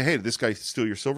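plain

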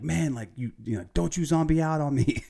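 mild, high-pitched, half-performed, acted-out yell. Retelling a scene where Ray yells at a man fallen to his knees, retelling a yell. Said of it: "Ray's like yelling like".

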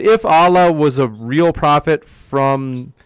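very slow, careful, deliberate reading aloud.

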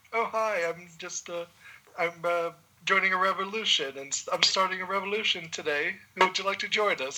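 mock soft New Zealand accent. Describing a giant rock monster, imitating his very soft Kiwi accent. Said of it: "this very soft Kiwi accent come out of him".

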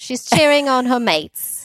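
bad, wobbly, high, loud Australian accent drifting Welsh. Talking about her teammates, the speaker slips into a bad australian accent. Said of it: "This is my bad Australian accent".

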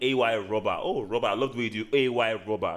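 ordinary talk

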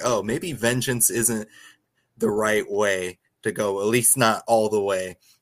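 ordinary delivery

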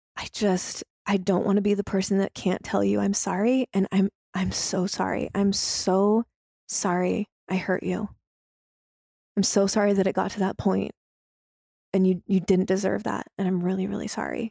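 put-on somber, solemn tone. Speaker reenacts calling someone back to apologize, retelling a somber apology. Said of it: "had a very somber voice".

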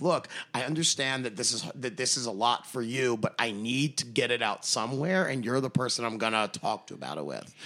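plain

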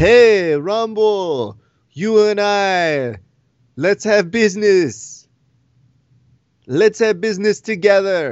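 slow, halting broken English with a drawn-out "I". Retelling how he called out the fight: imitating broken English. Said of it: "in that kind of broken English way".

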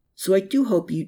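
ordinary delivery, nothing marked

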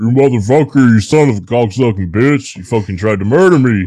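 loud, raging monster roar. Trying out what a good Bigfoot voice would be, in a Bigfoot voice. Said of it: "What would be a good Bigfoot voice?".

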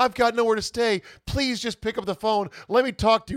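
mock frantic, panic-stricken, high, hysterical voice. Retelling a woman's messages to a ballplayer: imitating someone hysterical and panicking. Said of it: "starts getting hysterical and panic".

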